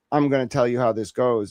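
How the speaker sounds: put-on condescending, bossy tone. Retelling a phone call with a stranger, imitating a condescending tone. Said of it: "tried to put on that tone with me".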